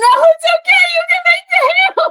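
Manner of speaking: sobbing through the words, very high-pitched. Speaker reenacting what they said through tears over the turkey, imitating crying while talking. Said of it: "through gallons of tears being like".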